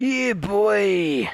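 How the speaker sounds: little Cockney geezer voice, drawn out. Retelling a friend's reply about playing games later: Vaughan impression, Cockney geezer voice. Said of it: "I think I've got my Vaughan impression".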